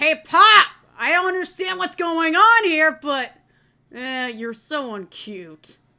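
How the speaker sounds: woman's loud, drawn-out acted anime boy voice. Recalling a 90s anime character, the speaker is imitating a woman-voiced boy. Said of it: "how he sounded like".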